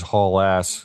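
ordinary talk

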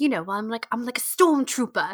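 put-on own accent heavily overemphasized and laid on thick. Speaker recalling John's bit in press interviews, John's overemphasized accent. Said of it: "always like overemphasize his accent".

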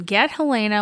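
normal talking voice

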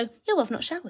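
breezy, nonchalant, offhand casual tone. Retelling the boyfriend's reply, imitating someone saying it casually. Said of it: "And so casually".

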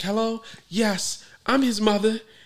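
put-on convincing, high girly voice. Speaker retelling how a friend phoned posing as his mother, imitating a friend's girl voice. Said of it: "he did a really good girl voice".

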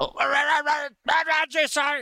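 acted, very high-pitched, flustered, nervous voice. Describing basic training, imitating a recruit answering the drill sergeant, freaking out. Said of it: "you're fucking like freaking out a little bit".

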